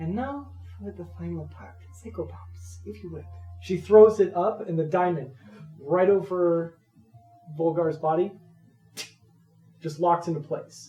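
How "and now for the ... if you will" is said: airy, dreamy, hushed near-whisper. A game master voices a spellcaster pulling out a diamond for the final part, dreamy. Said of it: "As a dreamy smile washes over her".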